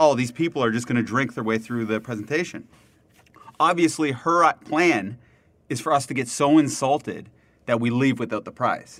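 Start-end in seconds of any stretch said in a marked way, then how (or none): none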